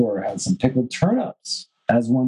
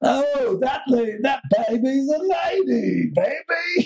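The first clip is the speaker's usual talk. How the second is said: very high-pitched, slow drawling; 13 semitones higher than usual. Joking about a baby, in an Austin Powers impression. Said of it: "an Austin Powers impression".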